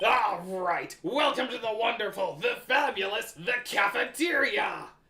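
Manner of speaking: loud, slightly crushed cartoon growl, belted out. Taking on the role of Wario: Wario voice. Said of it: "not a good Wario voice".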